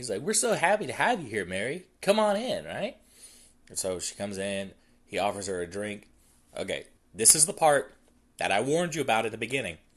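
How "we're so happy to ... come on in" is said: very high, fake, welcoming voice. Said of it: "I'm smiling when I say these things".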